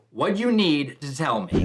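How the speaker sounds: ordinary talk, nothing marked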